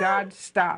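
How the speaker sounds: ordinary delivery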